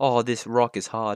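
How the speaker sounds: put-on, slow British accent with dropped R's. Showing how british people say hard: british accent, dropped r's. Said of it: "British people don't do their R's".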